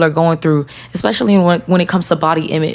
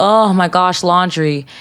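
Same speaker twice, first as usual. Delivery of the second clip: put-on complaining voice. Retelling complaining to a friend about chores: imitating own complaining. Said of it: "I be complaining".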